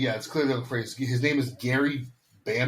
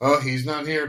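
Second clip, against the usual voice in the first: play-acted bored, dismissive, eye-rolling indifference; 3 semitones higher than usual. Retelling how the family says the scene: imitating eye-rolling indifference. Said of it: "saying it as almost like they're rolling their eyes".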